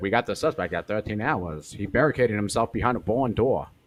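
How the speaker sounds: put-on old-time fifties cop voice, transatlantic accent. Imitating the cop on the news in a transatlantic accent. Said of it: "Transatlantic accent. He's like".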